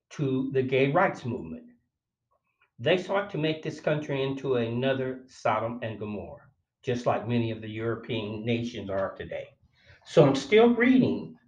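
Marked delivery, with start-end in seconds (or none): none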